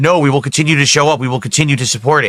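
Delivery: ordinary talk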